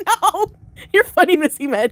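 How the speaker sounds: giddy, elated teasing tone, high-pitched and unhurried. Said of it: "are you going to be sounding that elated?".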